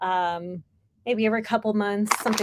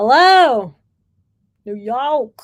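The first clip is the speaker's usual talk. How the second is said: fake, very loud New York accent; 3 semitones higher, 10 dB louder than usual. Greeting new york jokingly in a put-on new york accent. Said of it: "that accent was offensive".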